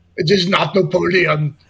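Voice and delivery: belted out loudly in an Austrian accent. Doing an Arnold Schwarzenegger impression while joking about an Austrian army. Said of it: "Sound like Arnold Schwarzenegger".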